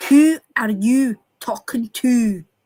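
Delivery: Scots accent with rounded, whistling who. Teaching someone how to shape their mouth, saying it in a typical Scots accent. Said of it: "That's your typical Scots accent".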